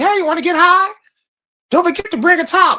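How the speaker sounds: very high, quick, squeaky cartoon voice, stoned-sounding. Speaker recalling a South Park parody he did, doing a Towelie impression. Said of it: "That voice, right?".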